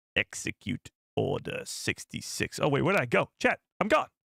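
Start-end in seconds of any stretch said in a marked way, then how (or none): 0.2-2.6 breathy, whispered voice. Doing a Palpatine impression requested by a viewer: Palpatine impression. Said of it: "I'll do it again for you".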